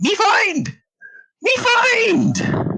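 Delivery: very high, very slow, swooping, excited goblin voice. Voicing a goblin swimming over, waving its hand: excited goblin voice. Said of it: "waving it excitedly, um, and saying".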